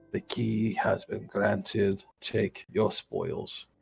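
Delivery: gravelly creature voice. Game master voices a rude creature answering each player, gravelly creature voice. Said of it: "repeats in a more gravelly vocal voice".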